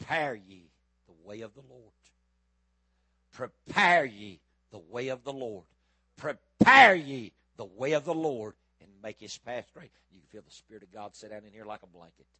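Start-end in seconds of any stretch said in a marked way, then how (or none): 0.0-8.5 booming, very loud, drawn-out preacher-like scream. Retelling turning and starting down that aisle, reenacting screaming at the top of his voice. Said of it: "I started screaming at the top of my voice".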